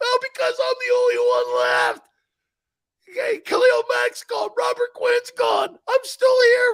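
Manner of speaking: blubbering, wailing, swooping sob through fake tears. Left alone in chicago and asked why else you are upset, answer crying. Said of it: "why else are you upset?".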